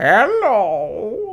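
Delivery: put-on old granny voice, high and drawn out. Greeting while playing a game, in your best grandmother voice. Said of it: "That was my best grandmother voice".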